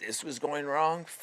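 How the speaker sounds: whiny, nagging, complaining gripe tone. Speaker acting out their inner critic: whiny inner-critic voice. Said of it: "it'd be whining, bitching, complaining".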